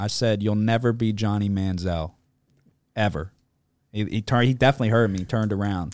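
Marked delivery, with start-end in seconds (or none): none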